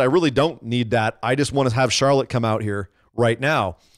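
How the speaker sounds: ordinary talk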